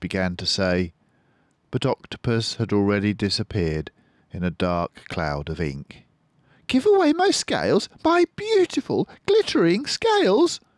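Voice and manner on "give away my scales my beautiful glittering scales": aghast, horrified, very high and swooping pitch. Narrator reads the fish's thought after the octopus vanishes; horrified. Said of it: "thought Rainbow Fish, horrified".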